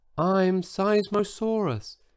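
tiny, high little voice, barely audible. Seismosaurus introduces itself to Brenda in a tiny voice. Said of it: "in a voice so tiny she could hardly hear it".

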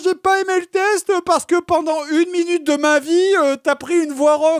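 high, mocking, petty whiny voice.

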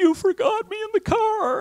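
put-on very high, weepy sobbing voice. Parent retells their six-year-old arriving after being forgotten in the car: imitating Sarah crying. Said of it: "she's crying and she's weeping".

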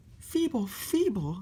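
very high, sputtering, spluttering delivery. Narrator reads a character's reply to the shunter's remark, spluttering. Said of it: "spluttered Sam".

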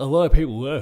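loud words forced out through a yawn. Someone discussing a game's release, speaking through a yawn. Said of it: "as I try and speak through a yawn there".

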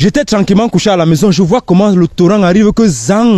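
high-pitched, loud comic character voice.

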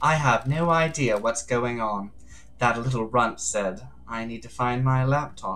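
put-on soft, hushed Bronx lady accent. Playing the game's exiled investigator after the other character leaves, in a Bronx lady accent. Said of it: "the Syndicate's lead investigator. After the damned harmony incident on Island 13, the Paradise Psycho Unit was shut down, and Love Dies was exiled to the idle lands as punishment. ... you you you were like a Bronx lady".

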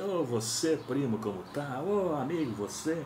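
put-on Paulista accent, high, drawn out, slow. Imitating a man back from São Paulo greeting his cousin, put-on São Paulo accent. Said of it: "falando sotaque paulista".

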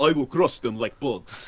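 put-on Russian accent with tough strongman bravado. Describing a game's stereotyped characters, the speaker quotes the russian in a tough-guy russian accent. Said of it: "It's the tough guy Russian".

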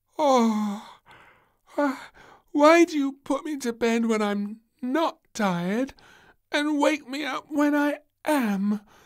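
shrill, very loud, very high, drowsy. Reading a story, the just-woken princess demands of the queen, sleepily. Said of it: "Demanded Little Princess sleepily".

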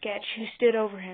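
ordinary delivery, nothing marked

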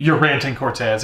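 plain

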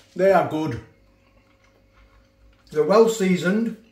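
talking with mouth full. Tasting recommended pork belly on camera, talking with mouth full. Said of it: "Apologise talking talking my mouth full".

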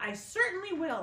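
sharp, shrill, very high and very loud snapping tone. Aunt Spiker answers Aunt Sponge about James, snapping. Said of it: "Aunt Spiker snapped".

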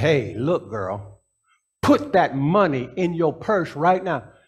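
put-on firm, stern fatherly scolding, rising pitch. Retelling telling a little girl to obey: retelling a scolding changed tone. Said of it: "I changed the tone of my, my voice".

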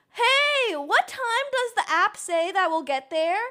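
pointed passive-aggressive delivery. Retelling a question to a slow Uber driver: imitating passive aggressive tone. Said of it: "passive aggressive".

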